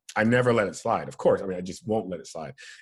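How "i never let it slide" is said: plain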